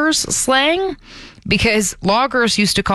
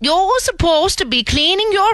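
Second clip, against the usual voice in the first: put-on accent, strangely Swedish-sounding; 10 semitones higher than usual. Imitating Bobby's mom from Bobby's World: Bobby's mom impression, strangely Swedish. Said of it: "that sounded strangely Swedish".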